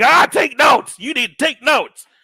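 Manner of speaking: very loud, high, heated yelling. Retelling what was said during a debate: imitating own past yelling. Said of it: "And I was yelling, like".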